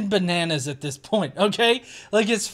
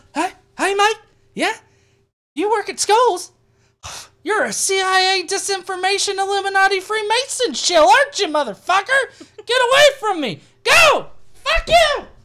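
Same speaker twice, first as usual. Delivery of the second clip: very high voice pushed right up, shrill shouting; 12 semitones higher, 5 dB louder than usual. Speaker reading a comment about a teacher, imitating Scotty's high voice. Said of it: "I try to get my voice as high as his".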